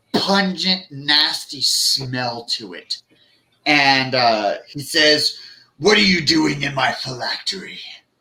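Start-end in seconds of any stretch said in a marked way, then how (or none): 5.7-7.8 thick, gurgling, burbling creature voice, rushed. Narrating a game, voicing a being that speaks inside your head, thick burbling voice. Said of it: "saying it in a thick, burbling voice".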